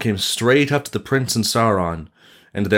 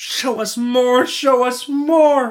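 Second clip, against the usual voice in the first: very high, very slow, clamoring crowd shout; 14 semitones higher than usual. An excited crowd calls out to the prince, shouting. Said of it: "the crowd shouted".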